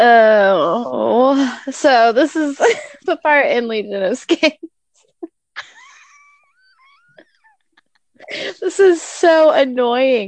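laughing while talking. Trying to move on while still laughing so hard while talking. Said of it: "I'm laughing so hard that my head hurts".

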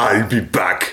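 put-on tough Austrian action-hero film-star voice. Answering what Arnie would say: Arnie impression. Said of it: "impressed with your impression".

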